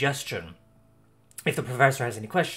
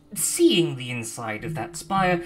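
ordinary talk, nothing marked

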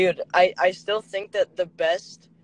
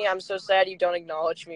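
usual speaking voice

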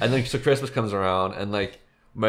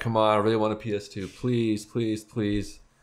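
mock begging, pleading tone. Speaker recalls asking their parents for a PS2, retelling their own begging. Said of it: "I remember like begging".

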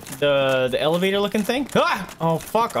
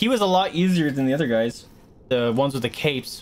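normal talking voice

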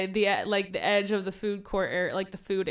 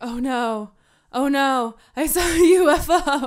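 play-acted freaked out, high, words dragged very slow; 5 semitones higher, 4 dB louder than usual. Recalling seeing lights out the window, retelling being freaked out. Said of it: "So I get all freaked out".

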